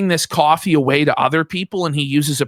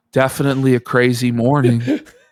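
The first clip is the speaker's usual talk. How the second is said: mock flat, unenthusiastic delivery, much lower pitch; 3 semitones lower than usual. Mimicking a man whose tone goes flat, imitating a flat tone. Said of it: "His tone goes so flat".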